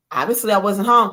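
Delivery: ordinary delivery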